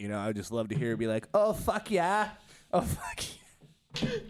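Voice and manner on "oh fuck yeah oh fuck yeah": put-on stretched-out Minnesota accent. Imagining a politician talking, in Sarah Palin's accent. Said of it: "I just love her accent".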